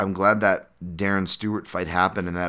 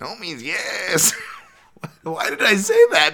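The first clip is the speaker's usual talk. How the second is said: laughing while speaking, higher and louder; 13 semitones higher, 5 dB louder than usual. Apologizing to viewers after a slip, giggling while talking. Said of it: "I'm still giggling at the".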